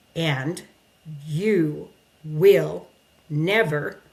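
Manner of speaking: held-in, very slow, word by word. Showing how they talk when pissed but not yelling, controlled, one word at a time. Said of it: "you hear that really controlled, one word at a time".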